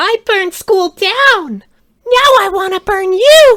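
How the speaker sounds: put-on shrill, very high, very loud girlish squeal. Reading a quote aloud after another speaker's line: Annie impression. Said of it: "Do one of those in your best Annie impressions".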